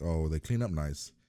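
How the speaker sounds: ordinary talk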